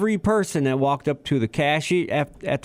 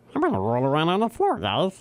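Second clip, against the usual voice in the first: animated cartoon character voice, swooping pitch. Quoting the cartoon character about rolling on the floor: Meatwad voice. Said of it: "Except for Meatwad".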